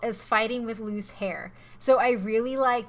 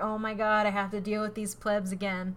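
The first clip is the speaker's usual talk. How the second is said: ordinary talk, nothing marked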